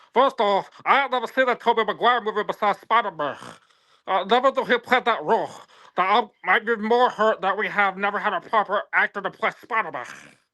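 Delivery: high, mocking put-on version of a voice. Reading the other speaker's message back aloud, imitating the other speaker's voice. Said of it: "I'll do it in your, like, voice".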